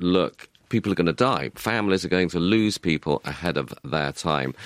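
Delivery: plain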